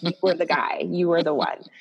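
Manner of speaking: ordinary delivery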